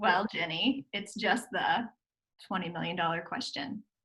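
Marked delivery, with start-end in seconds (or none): none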